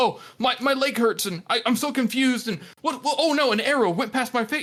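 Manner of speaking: high, frightened, bewildered, fretting voice. Describing how a battle scene would read if the hero were scared: imitating a frightened, confused fighter. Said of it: "He's not afraid".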